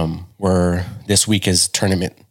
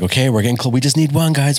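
high, raised mock shout; 7 semitones higher than usual. Retelling yelling encouragement to the team during the game: retelling own yelling. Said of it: "I keep yelling this".

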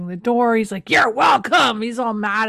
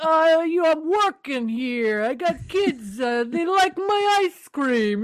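put-on New York accent, higher, slower; 6 semitones higher than usual. Retelling what the ice cream guy from New York said, in a New York accent. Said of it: "He's talking like this".

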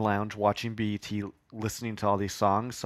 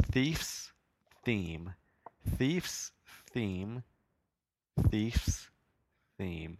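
deliberate, drawn-out, slow, soft, careful delivery; 5 dB quieter than usual. Trying a tongue twister three times, saying it slowly. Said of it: "Let me say it three times slow".

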